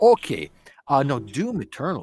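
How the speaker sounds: put-on Scottish accent, very loud and swooping. Answering someone who says he can't follow the dialect, in a Scottish accent. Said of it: "by using the Scottish accent".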